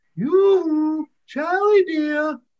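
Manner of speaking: tinkly, clear, very high, sweet little voice. Reading a tale, a voice calls out from by the weir gate, tinkly, clear little voice. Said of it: "kind of tinkly and clear, a pretty little voice says".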